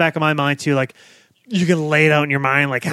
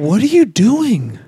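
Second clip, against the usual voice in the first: put-on guileless, innocent tone, pitched up; 5 semitones higher, 4 dB louder than usual. Retelling how Mulder sounds when he walks in: imitating an innocent voice. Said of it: "the level of innocence in his voice".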